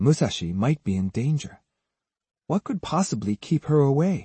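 usual speaking voice

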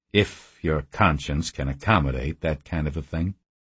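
plain

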